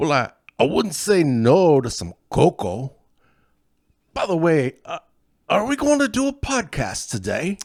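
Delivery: bad, clumsy, sing-song fake Swiss accent. Playing a character in a bit before the podcast, bad put-on accent. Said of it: "can can I talk in my normal voice now?".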